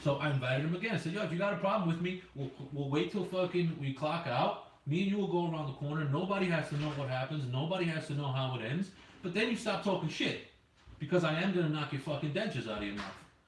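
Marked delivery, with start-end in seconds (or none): none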